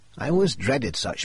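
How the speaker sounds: plain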